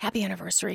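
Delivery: whispering. Telling how a busboy clearing dishes greeted the couple, retelling a whisper. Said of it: "He whispered to us".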